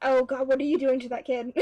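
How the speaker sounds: plain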